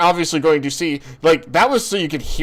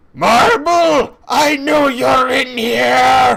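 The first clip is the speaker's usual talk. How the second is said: demoness voice, loud, high, very slow, drawn-out scream; 8 semitones higher, 5 dB louder than usual. Voicing a demoness who walks into the shop: screaming demoness. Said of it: "screams out".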